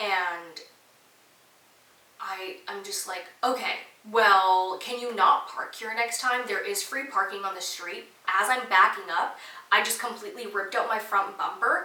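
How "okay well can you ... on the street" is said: put-on, attitude-laden, snippy, rude tone. Retelling asking the driver to park elsewhere, imitating own rude attitude. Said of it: "exactly that in exactly that attitude".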